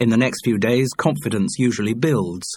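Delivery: ordinary delivery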